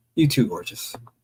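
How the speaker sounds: ordinary delivery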